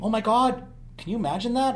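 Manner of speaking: lightly sarcastic tone. The speaker is talking about letting kids struggle and fail: a little sarcastic. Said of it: "I'm being a little sarcastic now".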